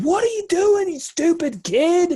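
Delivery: loud, shrill screaming at very high pitch. Voicing an angry truck driver who nearly hit the character: driver screaming. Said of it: "the guy lays into the horn and he's screaming".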